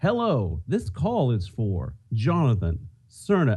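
slow, polite, pleasant recorded-message automated voice. Retelling a call from the pharmacy: imitating a pleasant automated voice. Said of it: "it's this same pleasant voice".

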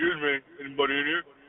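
very low, put-on deep manly voice. Calling out to others in the room: put-on deeper voice. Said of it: "He's trying to make his voice deeper".

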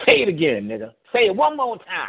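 very high, swooping, worked-up fit. Imitating Pinky Castro complaining about turns: imitating Pinky Castro. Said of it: "that's Pinky Castro".

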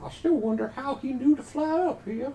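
put-on southern belle accent, pitched very high. Voicing a character among other players, slipping into an accidental southern belle accent. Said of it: "Now I'm a Southern Belle".

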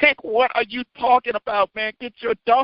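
high-pitched, exasperated, fed-up tone.

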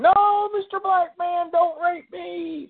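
very high, slow, drawn-out pleading squeal. Imagining how a man would sound, the speaker is imitating someone squealing. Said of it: "I can hear him squealing".

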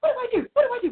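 put-on frantic voice. Speaker retells running around the house with her daughter not home, retelling her own panic. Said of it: "running around the house going".

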